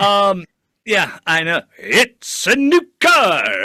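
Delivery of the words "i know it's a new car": very loud, slow, booming radio announcer voice. Talking to the guys, speaker slips into his radio voice. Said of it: "that's my radio voice".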